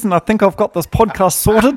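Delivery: put-on thick New Zealand accent.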